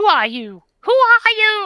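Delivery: very high, very loud, shrill, swooping bad woman's voice. Narrating a scene, voicing a woman who calls out after a knock, bad woman's voice. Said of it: "That's a bad voice".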